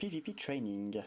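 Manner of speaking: very slow, slight put-on English accent. Announcing the name of a new video series, with a little English accent. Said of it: "avec le petit accent anglais".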